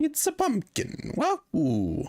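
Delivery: very high, swooping character voice, drawn out. Reacting to a shout-out to Task Pumpkin: Mario impression. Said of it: "That's my Mario impression".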